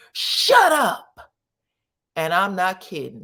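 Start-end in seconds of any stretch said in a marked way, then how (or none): 0.2-1.1 very high, shrill, loud drill-sergeant scream. Retelling how a man screamed at Kiki, retelling a drill-sergeant scream. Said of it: "screams like a drill sergeant".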